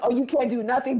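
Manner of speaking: put-on angry voice. Retelling how a woman got mad at him: imitating someone getting mad. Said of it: "she's getting mad at him".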